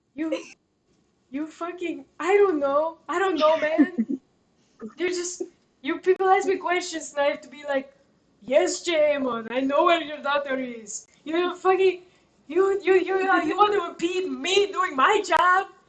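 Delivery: desperate sad butler voice. Voicing the house's head butler, who is questioned about the daughter, desperate and sad. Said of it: "very sad, very desperate right now".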